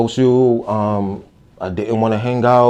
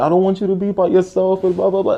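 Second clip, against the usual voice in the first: put-on tearful bawling through the words; 9 semitones higher than usual. Retelling an older sister crying at the lunch table: imitating someone crying. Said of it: "and just crying".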